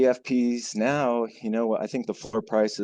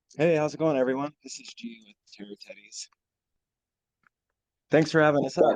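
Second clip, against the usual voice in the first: slightly winded, catching breath; 3 semitones higher than usual. Guest greeting everyone after running downstairs, a little out of breath. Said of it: "a little out of breath".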